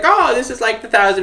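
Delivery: put-on high old person voice. Retelling a video game scene, the speaker quotes Frankly in an old person voice. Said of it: "that's just my old person voice now".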